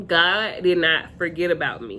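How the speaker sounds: normal talking voice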